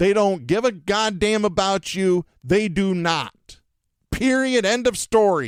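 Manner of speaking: worked-up, heated, fired-up, angry outburst. A speaker talking about politicians who only want to stay in power, getting fired up. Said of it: "I am getting fired up right now".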